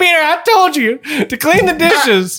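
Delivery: put-on very high, doddery, senile-sounding old-lady voice. Acting out a scene where Aunt May walks in on Peter: senile old Aunt May voice. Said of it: "I want Aunt May to walk in on Peter in the Spider-Man suit and be like".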